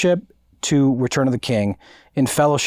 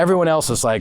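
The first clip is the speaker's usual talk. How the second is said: plain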